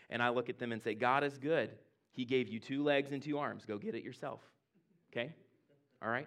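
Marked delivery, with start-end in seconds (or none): 0.9-4.4 imitated sarcastic tone. Retelling the reply to kids who call for a water bottle: retelling own sarcastic reply. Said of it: "I maybe do it in a little sarcastic way".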